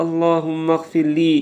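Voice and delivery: ordinary talk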